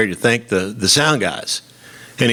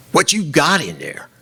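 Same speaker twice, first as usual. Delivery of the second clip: put-on genuine Southern accent, Mississippi style; 5 semitones higher than usual. Retelling a night traffic stop in Mississippi, voicing the cop, Southern accent. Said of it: "cop with a real Southern accent is like".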